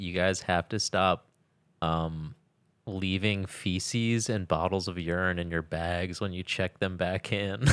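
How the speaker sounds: ordinary delivery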